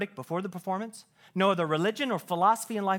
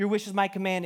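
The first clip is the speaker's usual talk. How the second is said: plain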